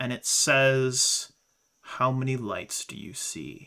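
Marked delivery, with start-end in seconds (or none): 1.8-3.7 dark, deep voice, a little deeper than usual. Narrator voicing the Vulcan speaking inside the listener's mind, darker, deeper Vulcan voice. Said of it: "it is darker and a little deeper".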